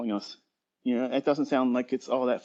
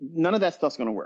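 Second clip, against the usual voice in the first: plain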